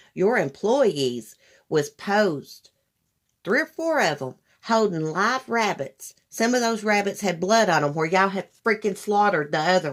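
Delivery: ordinary talk, nothing marked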